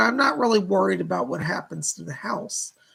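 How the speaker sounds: ordinary delivery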